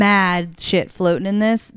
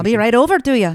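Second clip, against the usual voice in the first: put-on Irish accent, higher; 4 semitones higher than usual. Retelling what the host with a great accent said: imitating the Irish host's accent. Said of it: "I don't think that was very good".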